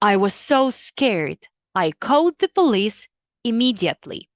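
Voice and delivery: ordinary talk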